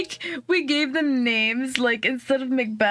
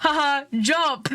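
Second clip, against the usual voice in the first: acted playful, teasing child-like taunting tone; 2 semitones higher than usual. Retelling what a fourth grader shouted at the pool: imitating a kid yelling jokingly. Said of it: "just yelled".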